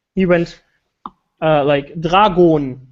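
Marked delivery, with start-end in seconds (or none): 2.1-2.8 put-on dragon said in a heavy German accent. Imitating a German YouTuber's kit brand names, heavy German accent on Dragon. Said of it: "he always pronounced the kit manufacturers like really German".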